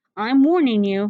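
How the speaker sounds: bold, fierce, challenging tone. Narrator reading a character's warning line, fierce and bold. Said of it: "he says in that fierce, bold way he has".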